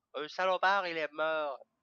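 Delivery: put-on southern French accent.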